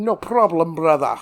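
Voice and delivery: put-on Scottish accent. Retelling a man's parting words before he went back to the boat, Sean Connery impression. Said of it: "he fucking Sean Connery his way back".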